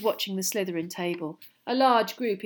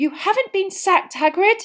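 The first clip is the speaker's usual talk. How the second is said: very high, very loud gasp; 12 semitones higher, 8 dB louder than usual. Speaking to a teacher who is drinking from a tankard: gasped. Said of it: "gasped Hermione".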